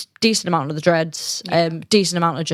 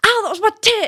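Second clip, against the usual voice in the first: mock shrill, very high, really loud yell; 3 dB louder than usual. Speaker retells being hit hard during a scrap, retelling a loud yell. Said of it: "like really loudly".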